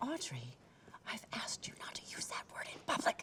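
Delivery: hushed whisper. Speaking to Audrey about her language in public, whispering.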